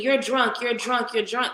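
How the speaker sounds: restrained, mild, repeated accusing yell. Recounting a video in which a man screams at a woman, imitating someone screaming. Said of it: "he was screaming".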